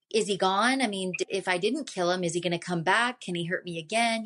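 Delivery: normal talking voice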